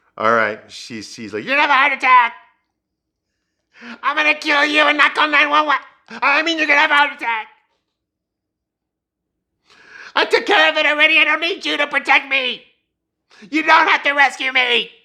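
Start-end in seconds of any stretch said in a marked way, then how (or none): 1.5-14.9 very high, shrill, loud, frantic screaming. Retelling how Carrie screamed at him on the stairs: imitating Carrie screaming. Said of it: "Carrie keeps screaming at him the whole time".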